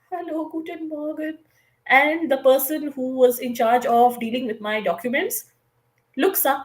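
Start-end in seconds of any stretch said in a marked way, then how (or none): 0.1-1.4 tiny, soft, shy, timid little mouse voice. Retelling shyly entering the office to hand in documents, imitating a small mouse voice. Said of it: "like a very small mouse".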